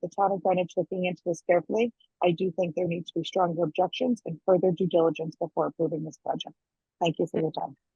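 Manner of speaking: rapid, rushed, rattled-off reading. A speaker giving a statement on a project, reading very quickly. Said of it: "you read very quickly".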